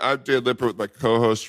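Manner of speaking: ordinary delivery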